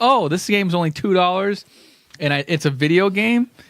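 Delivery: plain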